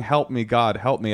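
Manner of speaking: normal talking voice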